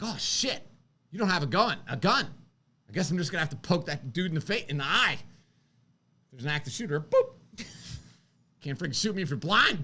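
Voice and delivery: frantic, panicked rambling voice. Retelling walking into the store without a gun: acting out own inner panic. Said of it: "This is the inner, like, voice in my head".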